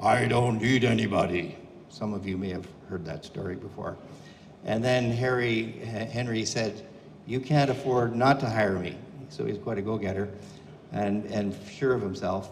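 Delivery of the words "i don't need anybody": gruff, rough-edged ranch owner voice. Retelling Henry's story, quoting the rancher in a gruff rancher voice. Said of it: "as Henry would tell the story in a gruff voice".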